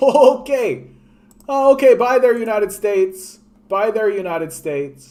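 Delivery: high, loud, mocking tone. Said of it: "the Europeans are just like".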